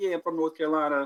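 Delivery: bad, weak, high put-on Boston accent. Retelling a video of someone claiming to be local: imitating a Boston accent. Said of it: "he had the most, like, Boston accent ever".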